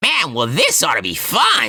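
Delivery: slow spluttering with high swooping pitch. Quoting a character's remark, in a bad Donald Duck impression. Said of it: "I can't do a good like Donald Duck impression".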